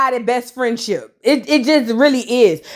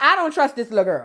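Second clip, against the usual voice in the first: ordinary talk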